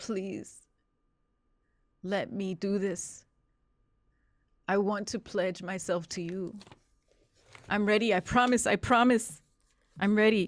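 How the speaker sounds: tearful, crying, shaking voice. A man just off his shift looks out on the ocean and pledges himself, crying and shaking. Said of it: "He is crying, shaking, and he says".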